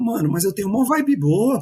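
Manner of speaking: high, indignant tone.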